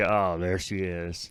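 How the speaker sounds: slow, deflated, disappointed groan. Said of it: "It's like".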